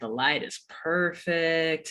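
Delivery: mock laid-back, cool, suave, smooth-talking delivery. Retelling a man at the storm door checking the planets' alignment, imitating a cool, suave voice. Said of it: "in like his kind of cool, suave voice".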